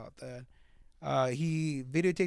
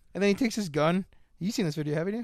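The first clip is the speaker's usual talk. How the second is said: ordinary talk, nothing marked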